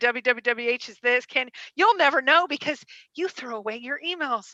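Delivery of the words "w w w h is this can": plain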